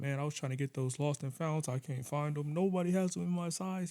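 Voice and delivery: panicked, upset, frantic freaking-out rant. Retelling what an upset grown man said to him; imitating someone freaking out. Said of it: "He was like freaking out".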